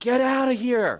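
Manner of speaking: very high, loud shrieked scream. Retelling running for cover, calling out to another person: retelling a scream. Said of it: "And I screamed to John".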